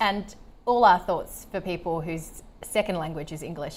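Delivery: ordinary talk, nothing marked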